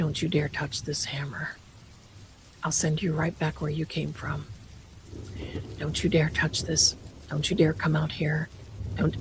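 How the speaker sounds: soft, breathy whisper under the breath. Retelling pulling on something in a closet, speaker whispers a warning: retelling a whisper. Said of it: "I'm whispering".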